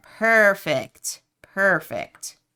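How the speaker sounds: dripping with sarcasm. Speaker reacting to a new distraction, with heavy sarcasm. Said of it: "with so much sarcasm in my voice".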